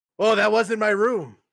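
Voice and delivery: fake drunk voice, high and slow. Voicing a character who pretends to be drunk at the wrong door: pretending to be drunk. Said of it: "pretend to be drunk and be like".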